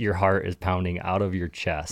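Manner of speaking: normal talking voice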